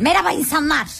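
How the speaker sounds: harsh scolding tone. Showing a guest how to greet the listeners, stern. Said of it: "sert konuşmalara".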